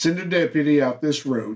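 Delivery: ordinary talk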